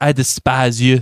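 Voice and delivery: bad put-on French accent. Podcast host retells Michel's line to Lorelai in the worst French accent as Michel. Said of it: "I'm totally going to do the worst French accent".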